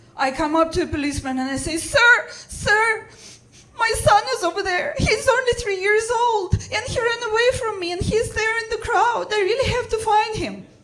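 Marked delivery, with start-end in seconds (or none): 1.8-10.6 high, sobbing, frantic, hysterical pleading tone. Telling a story, the speaker re-enacts pleading with a policeman, retelling a hysterical crying plea. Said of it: "I'm crying. I feel hysterical".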